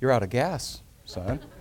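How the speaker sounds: mock utterly calm, soft, unhurried delivery. Telling a story about his father; retelling father's very calm voice. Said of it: "my father said in a very calm voice".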